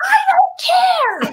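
very high, shrill screaming outburst. Retelling slamming the door on people in the house: retelling a scream. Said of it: "I slammed the door screaming".

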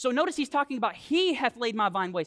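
ordinary delivery

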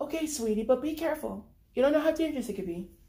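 gentle, calming, sweet, nice motherly tone. A mother answers her teenage son on the phone: sweet, nice mother voice.

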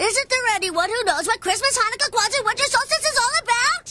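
loud, full-throated yell. Character calling out a question to everyone before a listener answers, yelling. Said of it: "there's no need to yell".

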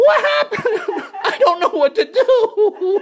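bewildered panic, wailed out high-pitched. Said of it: "I'm standing there going".

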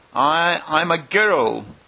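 unsure, hesitant tone. Alice answers the pigeon's question about what she is; doubtful. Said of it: "rather doubtfully".

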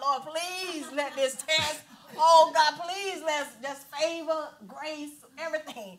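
high, crying-out voice. Speaker retells praying while he went through more blood tests, acting out crying out to God. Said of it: "I'm like crying out to God".

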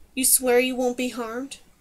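ordinary delivery, nothing marked

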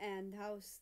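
ordinary delivery

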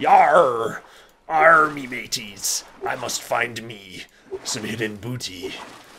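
put-on mock pirate voice. Speaker on a life raft spotting a pirate ship: pirate voice. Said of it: "is this a pirate ship?".

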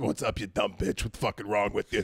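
low, cartoonishly unhinged, deranged cartoon woman voice. Answering a complaint about being too nice, the speaker talks like SpongeBob's chocolate lady. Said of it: "talk like the fucking chocolate lady from SpongeBob".

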